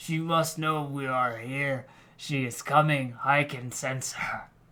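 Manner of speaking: husky and slowed. A narrator reads Haldora's reply in a story, in a deep, hoarse voice. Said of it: "She speaks to [name], / her voice deep and hoarse".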